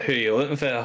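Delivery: put-on offhand Scottish accent, noble polish slipping. Voicing a character with gun in hand, in a Scottish accent. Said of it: "a bit more of a Scottish".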